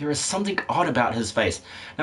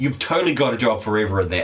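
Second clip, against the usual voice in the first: quick, fast, rattled-off delivery.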